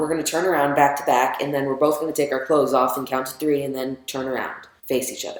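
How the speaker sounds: normal talking voice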